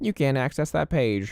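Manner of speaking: annoying, stupid computer voice. Speaker imitates their computer when computer weirdness happens, annoying computer voice. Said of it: "I'm gonna use that voice".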